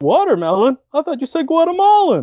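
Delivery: very high, swooping, comic voice. Redoing a movie line after being asked for a Jerry Seinfeld impression. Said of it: "with your best Jerry Seinfeld impression".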